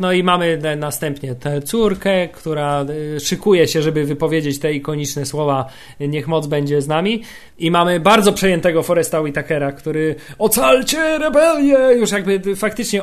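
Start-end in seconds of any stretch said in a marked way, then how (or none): 10.4-11.8 mock very high, tearful, weeping, weak voice. Recounting a film scene, the speaker imitates Forest Whitaker's dying plea. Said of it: "ostatkiem sił to mówił".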